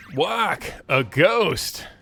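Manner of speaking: sudden, high, startled shriek of fright. Reading a game line after spotting a ghost: shriek. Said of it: "that was the best shriek I've heard in ages".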